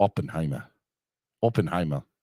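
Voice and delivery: put-on German accent. Asked to say a movie title in a german accent. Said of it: "say the title of the movie in a German accent".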